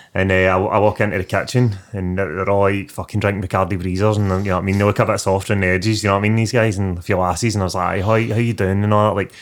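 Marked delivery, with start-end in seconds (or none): 8.0-8.9 put-on softened, toned-down, sanitised accent. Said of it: "modifying my accent, sanitising it".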